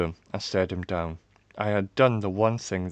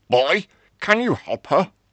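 very high, raised voice calling out from a distance; 10 semitones higher, 8 dB louder than usual. A father, somewhere nearby, addresses a boy, called out. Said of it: "my father called out".

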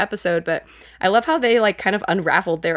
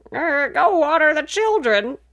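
very high-pitched, dotty, confused grandmother voice; 9 semitones higher than usual. Mocking a grandma character's senility that seems fake: imitating a senile grandma. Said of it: "senility that irritates me".

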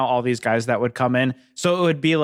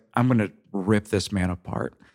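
low, barely carrying mutter under the breath; 4 semitones lower, 3 dB quieter than usual. Retelling what someone said under his breath: imitating muttering under breath. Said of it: "kind of under his breath".

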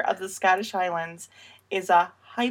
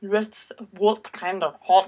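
clumsy, bad, put-on Scottish accent. Having typed halt instead of hat, the speaker asks about it in a bad Scottish accent. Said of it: "That is a very bad Scottish accent".

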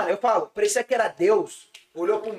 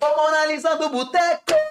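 higher-pitched shout; 7 semitones higher than usual. Speaker retells what a guy shouted out: retelling a shout. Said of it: "Aí ele gritou".

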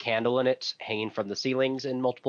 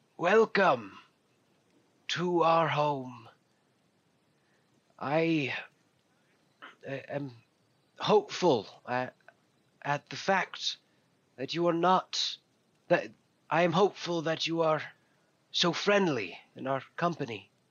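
put-on weathered, crackling, halting old person's voice; 3 semitones higher than usual. An old tiefling man greets the visitors with a slow bow: crackled, weathered voice. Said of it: "his voice comes out crackled and weathered".

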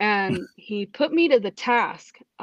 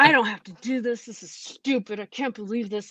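imitated angry grumbling, mad muttering. Retelling scrubbing a trash can as a punishment: imitating angry grumbling. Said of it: "I'm grumbling, and I'm getting mad".

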